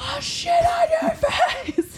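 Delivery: mock-screaming. Telling a restaurant story, imitating someone screaming. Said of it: "keeps screaming this in the middle".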